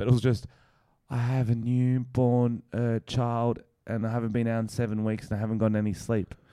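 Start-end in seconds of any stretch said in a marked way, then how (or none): 1.1-6.2 acted whispering. Retelling what a friend said into an ear: imitating someone whispering. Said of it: "Why are you whispering that?".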